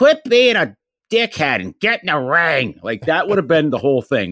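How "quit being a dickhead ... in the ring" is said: put-on high-pitched Philadelphia woman's voice, Philly accent. Imagining what Adrian would have said to the fighter, imitating Adrian as a Philly chick. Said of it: "Adrian was a real Philly chick".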